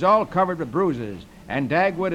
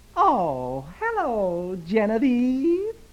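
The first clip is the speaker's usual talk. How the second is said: sweet, cutesy, teasing sing-song voice; 4 semitones higher than usual. Retelling a comic strip: Dagwood greets Herb through the window, saying it cutely. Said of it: "Dagwood says cutely".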